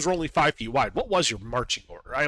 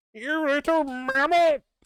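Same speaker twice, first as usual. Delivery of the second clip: thin, wheezing, very high-pitched creature voice; 12 semitones higher, 3 dB louder than usual. The narrator voices a speaker of Undercommon addressing the badger, wheezy, high-pitched voice. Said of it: "wheezy, high-pitched voice".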